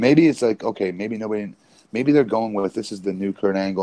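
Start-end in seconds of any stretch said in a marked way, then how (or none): none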